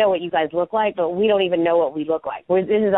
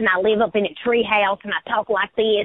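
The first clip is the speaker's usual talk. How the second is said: put-on Southern accent in a girl voice; 3 semitones higher than usual. Recalling a play she did at nineteen, showing her role: Southern redneck girl accent. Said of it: "I played this like serious redneck girl like this".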